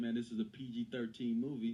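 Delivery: plain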